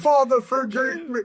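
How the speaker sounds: weeping, crying, very high-pitched wail. Retelling a preacher crying on TV after being caught: imitating someone crying.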